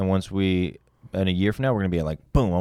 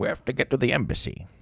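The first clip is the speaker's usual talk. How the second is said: put-on Scottish film-star voice, pitched higher; 5 semitones higher than usual. Doing an impression on request: Sean Connery impression. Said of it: "Do a Sean Connery".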